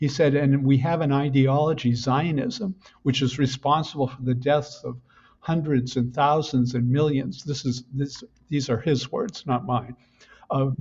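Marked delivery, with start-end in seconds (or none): none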